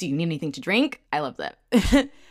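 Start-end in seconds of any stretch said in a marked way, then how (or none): 0.0-1.0 polite, helpful customer-service voice. Recapping a show, the speaker quotes Pyonghua in her customer service voice. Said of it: "she goes into her customer service voice".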